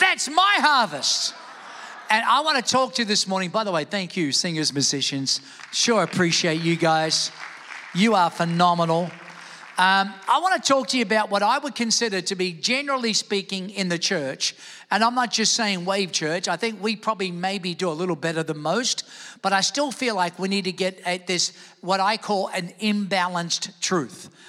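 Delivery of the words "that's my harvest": shouted loud and high. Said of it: "One more time".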